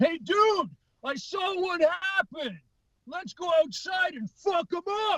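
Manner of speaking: high-pitched different voice. Retelling a stage joke, imitating a stranger in a bar who offers help. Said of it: "do an impression of him".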